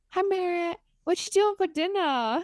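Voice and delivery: put-on very high, tiny little girl voice. Retelling how a little girl talked on her play phone: imitating a child talking. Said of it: "she's like".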